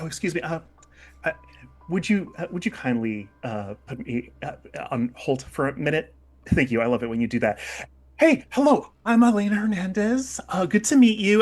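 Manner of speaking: effusive, gushing tone. Voicing a character greeting newcomers mid phone call: bubbly and effusive character voice. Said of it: "just very bubbly and effusive".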